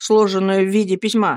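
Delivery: ordinary delivery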